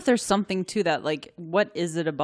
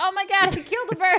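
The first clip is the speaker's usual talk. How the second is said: very high, shocked, yelled outburst. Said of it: "I yelled out".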